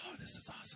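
hushed, worked-up whisper. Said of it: "my brother was all worked up about this".

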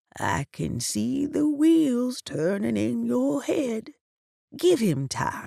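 voice dropped low to a hush. Narrator reads a woman's reply to the narrator's questions: lowered voice.

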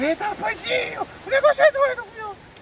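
high, loud, excited yelling.

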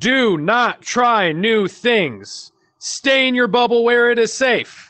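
loud, high-pitched, slow yell, like all capitals. Sharing a tip written in all caps, yelled at the listener. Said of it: "I'm going to yell it at you".

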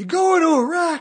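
shrill bellow at the very top of the lungs. Retelling someone shouting from a boat deck in a harbor: imitating a loud shout. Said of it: "At the top of his lungs".

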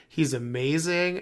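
plain

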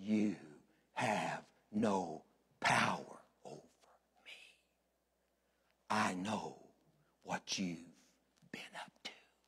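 very quiet, low, gruff, gravelly demon rasp. Speaker retells what the demons said to a pastor, in a low, gravelly, gruff voice. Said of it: "from way down low and gravelly and gruff".

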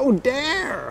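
put-on American accent, very high pitched. Speaker showing how to say an Oldham band's name, in an American accent. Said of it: "So you have to do it in an American accent".

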